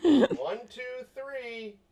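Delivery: very high-pitched, mocking, sarcastic voice. Counting to three while holding a button as told: sarcastic counting. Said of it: "I love that sarcastic one".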